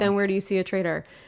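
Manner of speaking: level, unvarying, flat deadpan monotone. Retelling a line from the end of an episode, imitating a flat monotone. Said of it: "he says it in such like a monotone".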